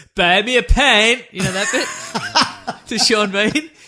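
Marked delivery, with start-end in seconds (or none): 0.2-1.2 put-on loud screamed delivery with a slight Welsh accent. Retelling someone's one GoldenEye bit, the speaker does a slightly Welsh Pierce Brosnan scream. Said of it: "which I assume is slightly Welsh".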